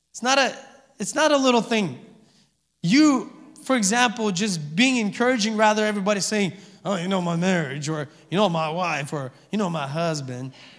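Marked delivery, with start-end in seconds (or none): 6.8-10.5 put-on Southern American accent creeping in. Imitating people complaining about their spouses: imitating people in a Southern accent. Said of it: "I don't know why Southern accent came upon me".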